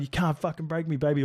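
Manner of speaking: brash, defiant, taunting cry full of bravado. Retelling running up the sideline at scrimmage: retelling screaming. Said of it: "screaming up the side".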